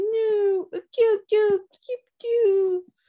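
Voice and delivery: grumpy, very high-pitched and loud. Voicing Taro while reading the page aloud: put-on grumpy Taro voice. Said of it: "Taro looks so grumpy. He's like".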